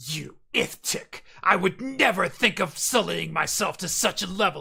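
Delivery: scornful, contemptuous tone, dripping disdain and disgust. Speaker describes a game character reacting to a dialogue choice; imitating Lizelle's utter disgust. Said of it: "speak with like this utter disgust and disdain".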